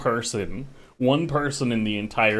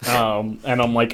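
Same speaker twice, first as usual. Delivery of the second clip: usual speaking voice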